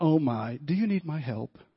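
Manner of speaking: sweet, heavenly, angelic voice. Retelling dropping the spaghetti jar, quoting Susan's offer of help in an angel's voice. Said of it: "Just such an angel's voice".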